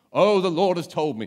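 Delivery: odd, booming, very loud put-on voice. Mimicking a bullish, impressive person who pressures others, weird put-on voice. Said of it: "put on a weird voice".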